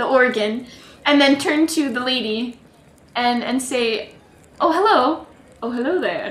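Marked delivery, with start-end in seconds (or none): 4.6-6.3 flirty, charming, flirtatious tone. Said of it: "Not flirty".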